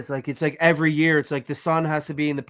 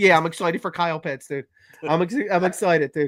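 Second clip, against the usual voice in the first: ordinary talk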